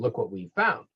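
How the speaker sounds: ordinary delivery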